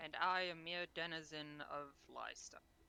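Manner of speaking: low, very dry delivery. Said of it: "Very dryly".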